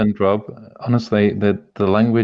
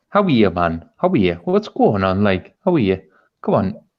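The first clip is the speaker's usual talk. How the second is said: put-on sing-song Geordie accent. Announcing a Geordie, then performing a Geordie accent. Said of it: "I'll do a Geordie".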